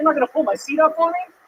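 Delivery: put-on shrill, very high, indignant, angry voice. Retelling what a date said on arrival: imitating a pissed-off date. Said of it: "This chick showed up super pissed".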